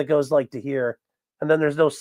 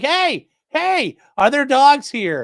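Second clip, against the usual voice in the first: put-on very high, loud, shrill, swooping barking scream; 11 semitones higher, 5 dB louder than usual. Speaker describes their dog barking at all the neighbors: imitating Clyde the dog screaming. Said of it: "Clyde's out there screaming like".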